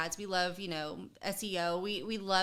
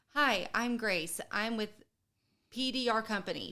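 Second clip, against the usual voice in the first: scripted robot voice, higher and slower; 2 semitones higher than usual. Advising listeners not to sound scripted, demonstrating a scripted robotic voice. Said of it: "don't sound scripted ... You don't want to sound like a, a robot".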